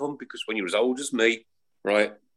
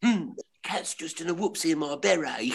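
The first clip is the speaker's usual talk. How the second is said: put-on whiny sitcom voice, higher pitch; 6 semitones higher, 3 dB quieter than usual. Showing the others a Frank Spencer impression. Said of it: "Frank Spencer".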